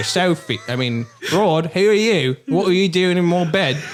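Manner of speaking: full put-on Cockney accent. Telling a body-swap story, speaking to your wife, in a full cockney accent. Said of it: "He's gone full Cockney".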